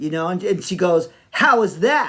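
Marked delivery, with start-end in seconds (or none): 1.3-2.1 high, loud, sassy delivery. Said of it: "real sassy".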